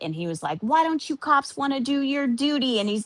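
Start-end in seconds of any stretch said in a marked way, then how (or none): 0.6-2.8 put-on angry voice, higher pitch. Retelling a call with a dispatcher who would not help: imitating someone angry. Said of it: "So Alex is freaking mad".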